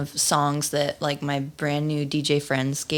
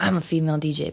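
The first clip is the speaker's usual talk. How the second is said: bone-dry, sarcastic, deadpan delivery. Retelling own reply to someone she worked with: imitating own dry delivery.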